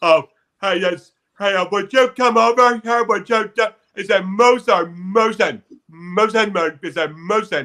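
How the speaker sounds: dumb-guy voice, stumbling and fumbling over words. Showing how comics copy a dumb guy voice: Brian Regan dumb guy voice. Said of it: "copies Brian Regan's dumb guy voice".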